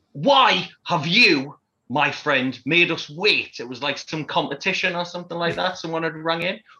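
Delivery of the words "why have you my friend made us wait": very slow, drawn-out presenter shout, words spaced. Retelling a TV host shouting at a caller: imitating Philip Schofield shouting. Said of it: "Philip Schofield shouting at the television".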